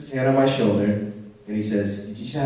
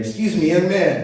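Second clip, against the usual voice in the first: mock, really loud, high calling out; 7 semitones higher, 5 dB louder than usual. Retelling walking out of a store, imitating the guy calling loudly after him. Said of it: "loud, real loud".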